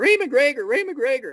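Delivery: mock very high, anguished, wailing, screaming cry. Retelling a call from a customer screaming her brother's name, imitating someone screaming. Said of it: "She's screaming".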